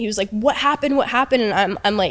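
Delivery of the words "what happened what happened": yell pitched up, pressing and insistent. Retelling how someone yelled at her after a traumatic moment: imitating Jack yelling. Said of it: "yelling at me".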